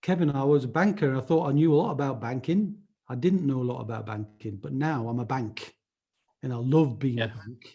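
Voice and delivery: amateurish, rough attempt at a Yorkshire accent. Telling Stephen what Chris says, imitating Chris in a Yorkshire accent. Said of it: "I'll try and do the Yorkshire accent".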